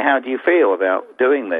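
ordinary talk

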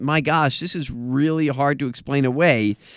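ordinary talk, nothing marked

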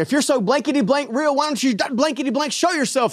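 defiant yelling, pitched high. Retelling yelling at the ceiling in anger: imitating own yelling. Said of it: "I'm yelling at the ceiling".

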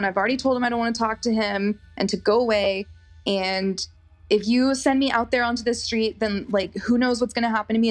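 ordinary delivery

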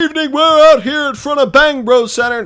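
very high, loud, terrible announcer voice. Imagining a sportscaster opening a broadcast outside the arena: terrible Marv Albert impression. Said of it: "That's a terrible Marv Albert impression".

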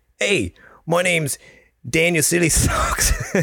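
bad put-on voice, sing-song and high. Imagining how Danny Silly Socks talks, bad Danny Silly Socks impression. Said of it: "That's how I imagine he talks".

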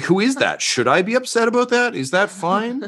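befuddled, lost, very high voice. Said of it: "she might just get befuddled".

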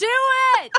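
all-out scream, very high and very loud. Cheering the others on during a game: screaming. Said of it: "I've been screaming, "Do it."".

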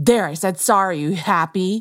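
petulant, angry, begrudging tone. Discussing bad apologies, demonstrating one with an angry tone. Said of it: "it has like an angry tone to it".

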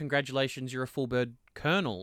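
normal talking voice

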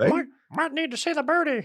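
very high, squeaky, badly done puppet voice. Asked who Elmo would endorse, answering as him: bad Elmo impression. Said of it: "That's not a good Elmo".

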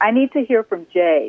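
ordinary talk

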